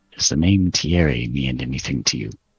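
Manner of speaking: barely audible half-whisper under the breath. Casting a message spell on a character in the game, half-whispering very quietly. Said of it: "I'll whisper really quietly under my breath".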